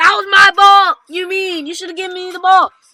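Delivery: very loud, furious, livid tone. Retelling a player's reaction after a teammate's turnover, retelling a furious outburst. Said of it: "KD's livid".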